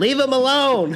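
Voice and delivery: high-pitched, loud, drawn-out yell.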